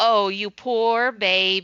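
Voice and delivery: put-on derisive, sarcastic sympathy, very slow. Retelling a phrase said to sisters as children: imitating sarcastic mock pity.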